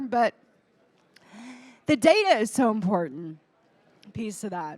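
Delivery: voice catching, breaking, halting, choked up. Speaker continuing after apologizing for getting a little choked up. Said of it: "I got a little choked up here".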